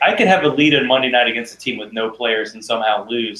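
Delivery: ordinary delivery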